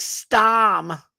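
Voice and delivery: storm with r dropped. Mimicking how these people say storm, exaggerated r-dropping accent on storm. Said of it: "These people are like, ... they put an A in front of anything that's supposed to have an R".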